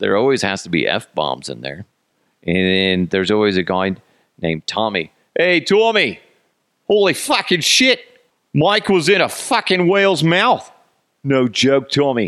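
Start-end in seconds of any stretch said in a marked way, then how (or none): 5.4-12.3 put-on accent slipping toward Australian. Mocking a typical story that always has a guy named tommy: accent slipping into australian. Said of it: "I go into the like Australian kind of thing".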